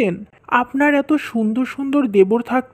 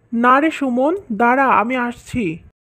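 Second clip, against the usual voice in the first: ordinary delivery, nothing marked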